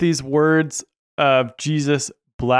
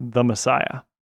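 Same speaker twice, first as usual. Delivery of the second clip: ordinary talk, nothing marked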